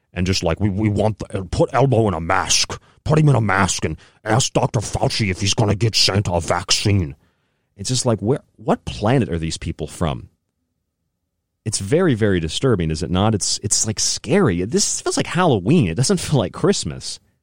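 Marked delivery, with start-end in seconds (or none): 0.6-7.2 swollen, puffed-cheek, big obese man voice. Speaker mocks a big-cheeked obese man, mimicking how he talks. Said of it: "just talking like this".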